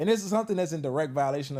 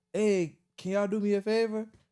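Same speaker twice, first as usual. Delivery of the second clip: put-on Haitian-accented voice; 5 semitones higher than usual. Retelling what a man from Haiti said when he pulled up: imitating a Haitian accent. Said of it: "He got an accent, a Haitian accent".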